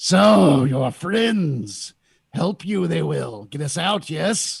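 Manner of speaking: guttural, twisted demon voice dragged up from the throat. From the other side of Erda's cell, the demonic Elysian speaks, twisted, horrible, guttural voice. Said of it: "the twisted, horrible, guttural voice".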